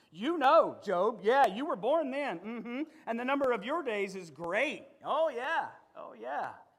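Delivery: put-on sarcastic divine voice, heavy dripping sarcasm. Voicing God mocking Job during a reading of Job 38: sarcastic voice of God. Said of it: "Sarcasm dripping from the lips of God".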